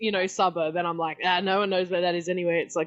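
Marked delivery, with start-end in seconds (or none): none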